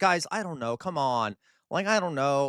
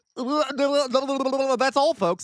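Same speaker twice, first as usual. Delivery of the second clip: very high, bad squeaky cartoon voice, That's drawn out; 11 semitones higher, 4 dB louder than usual. Reading a chat joke aloud, then trying a bad Porky Pig impression. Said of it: "I can't do the Porky Pig thing".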